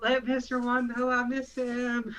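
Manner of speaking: high-pitched yelling.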